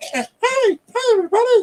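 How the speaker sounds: squeaky, tiny, very high-pitched chicken-lady voice. Speaker describes what a story shows after an egg hatches, very high chicken lady voice. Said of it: "the chicken lady's voice, but a really high octave".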